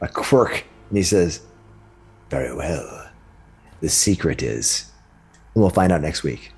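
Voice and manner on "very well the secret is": menacing, sinister tone, lower and quieter. Voicing a freed figure who looks back at a player: sinister tone. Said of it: "He gives you almost a sinister look".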